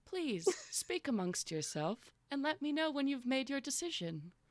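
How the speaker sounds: calm, soothing voice. Voicing a mysterious presence welcoming travellers: calming, soothing voice. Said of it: "a very calming, soothing voice comes to you and says".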